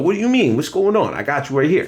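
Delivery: slight put-on Jersey accent. Praising an actor's performance, the speaker imitates his Jersey accent. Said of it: "the little like Jersey kind of".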